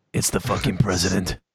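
very deep, gravelly put-on voice. Repeating a line he wrote, now in a Batman voice. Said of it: "I wrote that in a Batman voice".

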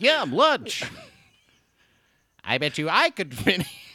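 loud nasal high voice. Retelling a voice actor at a panel: nasal Goku impression. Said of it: "Very nasal".

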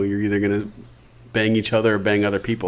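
plain

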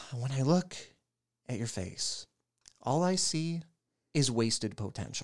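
mock grave, somber teacher voice with halting phrasing. Recounting a teacher pulling him into the hall, imitating her somber voice. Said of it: "That's her somber voice".

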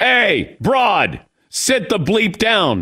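high, stretched-out yell. Retelling how a guy behind yelled at his wife at a hockey game: imitating a man yelling. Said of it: "this guy behind me yells to her".

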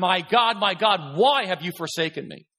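acted-out scream. Speaker explaining a verse, acting out Jesus screaming it out. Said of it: "he is screaming it out".

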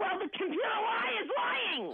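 high-pitched screaming. Arguing over the phone with an agent about a charge: screaming. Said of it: "Why are you screaming?".

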